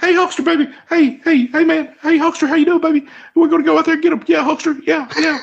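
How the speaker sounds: very high, squeaky, cartoonish hype-man chatter. Answering a request to imitate the manager: Jimmy Hart impression. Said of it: "Can you do an imitation of him?".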